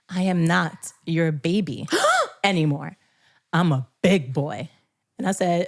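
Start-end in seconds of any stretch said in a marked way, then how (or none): 0.1-4.6 slow, dead-earnest, serious, acted delivery. Retelling a child's words on the morning of kindergarten: imitating a child, dead serious. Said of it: "looked me dead in the eyes and said".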